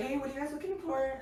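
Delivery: hushed, very soft, very high, gentle voice. Retelling what a big store worker said: imitating a very soft voice. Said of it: "he had the softest voice".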